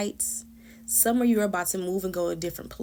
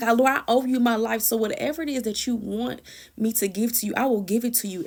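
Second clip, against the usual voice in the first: mock tearful, pleading crying out; 2 semitones higher than usual. Retelling a prayer to the Lord, imitating own crying prayer. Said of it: "That's how I'm talking to".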